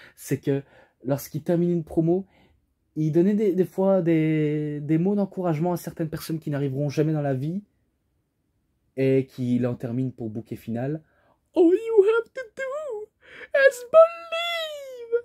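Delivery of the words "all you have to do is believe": very high, slow, stretched-out cartoon voice. Speaker quotes a wrestler's closing words of encouragement, doing a Mickey voice. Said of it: "je fais un peu avec la voix de Mickey".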